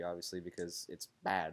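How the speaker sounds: odd-sounding low, flat voice on bad.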